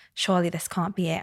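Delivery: ordinary talk, nothing marked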